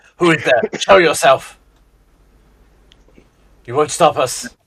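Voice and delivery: calling out loudly. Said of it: "did ask out loud in the dark".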